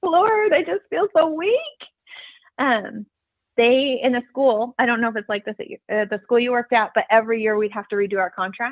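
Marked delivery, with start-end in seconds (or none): 0.0-1.6 play-acted, high-pitched, tearful bawling. Recalling praying while driving to school, retelling bawling prayer. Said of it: "just like bawling".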